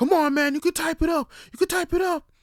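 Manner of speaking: shrill, very high-pitched, very loud egging-on cheering yell. Imitating coworkers cheering someone on at work: imitating coworkers yelling. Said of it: "they're yelling at you, like".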